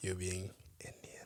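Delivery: soft unvoiced whisper under the breath.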